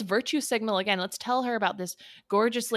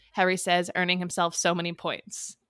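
ordinary delivery

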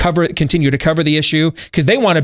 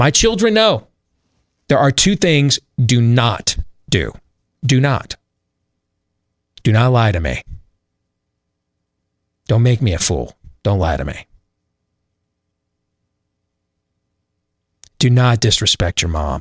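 stern, grave, serious, low voice; 4 semitones lower than usual. Parent showing the rules they lay down for their children, in a serious stern tone. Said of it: "Notice how my tone of voice just changed?".

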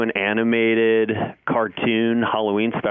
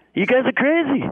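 put-on exasperated comedian voice, pitched higher. Describing how a TV host acts on set, doing a Larry David impression. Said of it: "That's my amazing Larry David impression".

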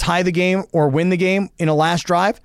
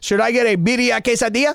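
put-on Latin American Spanish accent, pitched higher; 5 semitones higher than usual. Ordering food with friends, trying a Mario Lopez impression. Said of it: "That sounded like Scarface".

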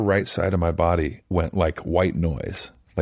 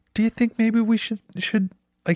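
put-on rising voice, much higher. Speaker recounts an urgent care doctor's odd bedside manner, imitating a voice going up. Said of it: "His like voice went up and he's like".

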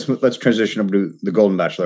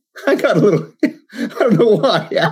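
on the verge of tears, voice pitched very high; 11 semitones higher than usual. After the other speaker shares a favorite movie line, admitting tearing up, teary. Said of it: "Are you crying?".

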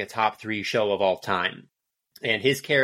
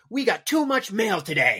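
acted-out, very high, really angry, furious yell; 11 semitones higher than usual. Act out the father speaking to his wife at the family dinner, imitating Richard Kind really angry. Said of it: "like really, really angrily".

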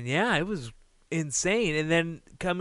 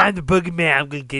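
loud booming voice, menacing and scary; 6 dB louder than usual. Discussing Royal Rumble entrants, doing how the Boogeyman talks. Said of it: "That's how the boogeyman talks".

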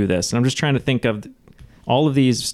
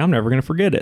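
put-on sudden switch into Southern US accent; 3 semitones higher than usual. Speaker quoting their own past thought, in a southern accent. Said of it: "How southern did you just go?".

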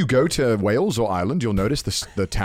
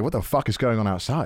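plain

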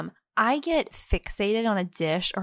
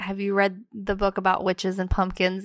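usual speaking voice

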